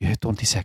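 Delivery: stage-whisper delivery, kept close. A game master voices a character standing outside the door, in a very hushed tone. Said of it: "he says in a very hushed tone".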